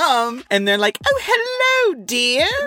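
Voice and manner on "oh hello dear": very high, bright, cheery English lady voice. Retelling a film scene where women greet her: imitating cheery English women. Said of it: "these very cheery English women".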